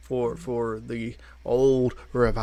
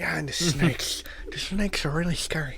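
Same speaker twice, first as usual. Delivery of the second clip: lisping cartoon voice; 5 semitones higher than usual. Retelling what he said about a zoo trip, sounding like Sid the Sloth. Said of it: "I sound like Sid the Sloth".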